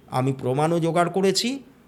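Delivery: ordinary delivery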